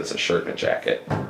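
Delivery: hushed whisper. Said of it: "I said".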